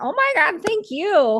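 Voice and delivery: high, loud gushing grateful exclamation. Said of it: "I'm like".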